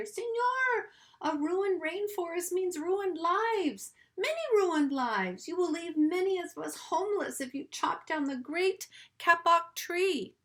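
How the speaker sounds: piping, squeaky, high little tree-frog voice. Reading a story, a small tree frog pipes in the man's ear in a squeaky tree frog voice. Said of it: "In a squeaky voice".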